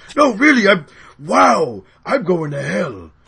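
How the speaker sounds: big, loud, swooping villain voice. Acting out a scene between two characters: Megatron voice. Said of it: "he does Megatron".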